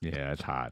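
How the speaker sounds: put-on deep voice. Joking that a man bun looks good: put-on deep voice. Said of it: "my deep voice".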